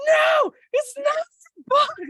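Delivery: very high, very slow, drawn-out yell. Retelling yelling at a beetle that hit her face: retelling yelling at a beetle. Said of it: "yelling at the beetle while it's hitting me".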